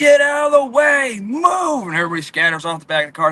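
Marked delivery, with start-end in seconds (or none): 0.0-1.9 put-on shrill, high, stretched-out screaming voice. Retelling how Greg's main guy cleared people off the car: imitating someone screaming. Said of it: "He comes screaming".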